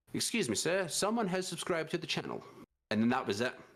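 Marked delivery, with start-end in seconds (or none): 0.1-2.4 synthetic, robotic computer-assistant voice. Imitating the old stream subscriber alert sound: robotic Jarvis-like voice. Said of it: "In a robotic, eh, like, a, a Jarvis-like voice".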